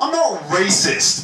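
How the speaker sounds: high, slow, drawn-out mock-earnest voice.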